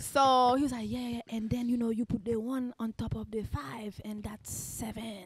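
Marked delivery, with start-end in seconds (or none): 0.9-5.3 put-on Haitian-accented speech with a hint of French. Retelling a man helping with homework: Haitian accent with French hint. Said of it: "Haitian with a, with a hint of French accent".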